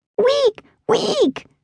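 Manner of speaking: squealing angrily. Narrating a story, voicing a tiny creature squealing at the narrator: angry squeal. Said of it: "The creature squealed at me, clearly angry".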